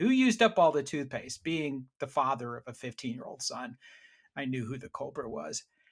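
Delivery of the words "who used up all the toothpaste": loud yell. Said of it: "So I yell through this closed door".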